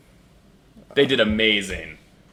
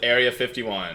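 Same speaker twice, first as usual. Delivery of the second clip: ordinary talk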